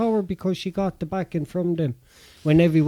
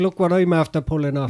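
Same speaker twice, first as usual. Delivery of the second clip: ordinary talk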